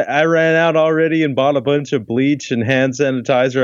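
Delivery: ordinary delivery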